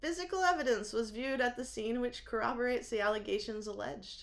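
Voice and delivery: ordinary talk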